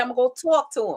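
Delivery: put-on New York accent. Teasing the other person, the speaker quotes them in a new york accent. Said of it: "I've never heard New York until right then".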